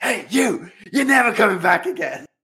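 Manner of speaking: very high-pitched, shrill, loud shout. Retelling how an assistant shouted at a woman through a window: imitating someone shouting. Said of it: "she shouts at her".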